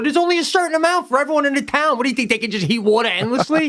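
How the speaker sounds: high-pitched, fast, exasperated delivery. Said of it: "I go".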